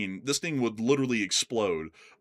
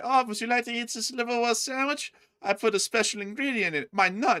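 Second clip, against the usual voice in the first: put-on creepy German man voice, higher pitch; 11 semitones higher than usual. Joking about being offered a sandwich by a creepy german guy: imitating a creepy german guy. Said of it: "you see some creepy German guy".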